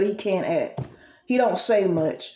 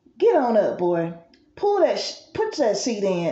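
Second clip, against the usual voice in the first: mock stern, scolding motherly voice. Retelling how she told him to get up: imitating a mother scolding her son. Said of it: "this sounds like a mother talking to her son".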